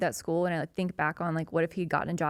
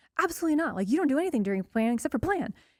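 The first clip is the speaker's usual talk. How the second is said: indignant, protective, huffy, pitched-up tone; 8 semitones higher than usual. Recalling the building's union rep confronting her during planning period, imitating a huffy man. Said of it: "he's in a big huff".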